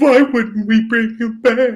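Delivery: put-on cowardly lion voice. Imitating a writer who wants Jimmy back: sounds like the Cowardly Lion. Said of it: "You sound like the cowardly lion from Wizard of Oz".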